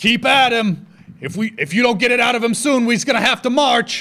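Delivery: high-pitched, loud yelling.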